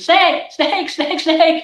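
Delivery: acted shrill screaming, pitched way up, repeated. Retelling riding on a friend's back after seeing a snake, retelling a scream. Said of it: "I was on her back and I was screaming".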